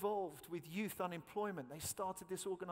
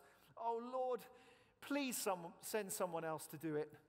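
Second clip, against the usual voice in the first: put-on crying, pleading tone. Acting out Moses begging God in the verse: acting out Moses' crying plea. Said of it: "You can hear the cry in his voice".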